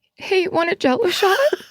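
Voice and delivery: very high, quavering, shaky, terrified voice. Reading a story about turning to face a guy in a Scream costume: retelling a shaky terrified voice. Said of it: "With a shaky voice and a terrified look".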